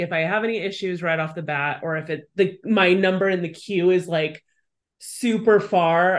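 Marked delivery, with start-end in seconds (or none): none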